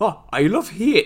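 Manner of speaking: Geordie accent, drawn out. Trying the show name in an accent after being asked: geordie accent. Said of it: "I don't know why I went Geordie".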